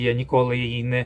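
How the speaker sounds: ordinary delivery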